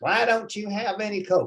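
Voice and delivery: put-on American Southern US accent, pitched high. Quoting his brother's wife asking why there is no Coke, Southern US accent. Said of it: "she's from the South, so she talks like that".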